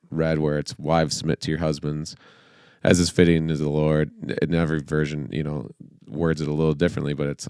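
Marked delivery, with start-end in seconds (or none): none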